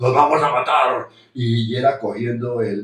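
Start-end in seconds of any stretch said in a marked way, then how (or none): 0.0-1.1 put-on thick-voiced yell, louder. Retelling how she screamed in the car at night: imitating a thick-voiced scream. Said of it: "con una voz gruesa".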